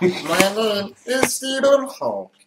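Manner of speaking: very high, very slow, swooping sing-song delivery. Showing how to get to a Snape voice: Stephen Hawking voice. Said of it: "You go straight to Stephen Hawking".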